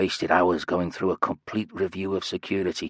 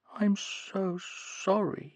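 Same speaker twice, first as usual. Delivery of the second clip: very high, soft, hushed, derisive mocking falsetto; 14 semitones higher, 6 dB quieter than usual. Alex speaks as Julia in front of the governor: mocking falsetto as Julia. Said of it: "He spoke in a falsetto, his voice mocking".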